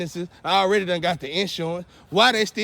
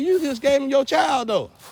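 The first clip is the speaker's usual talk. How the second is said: high-pitched scream; 7 semitones higher than usual. Retelling what was said to a woman in the car: imitating own screaming. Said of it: "I'm screaming like".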